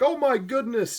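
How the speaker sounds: very high, prissy, fussy put-on robot voice. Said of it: "that was kinda my impression of C three P O".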